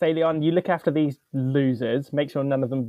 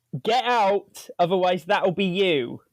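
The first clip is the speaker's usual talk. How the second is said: firm, stern delivery; 5 semitones higher than usual. A player's character orders frightened people out of the building, shouting. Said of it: "I'm going to shout at them like".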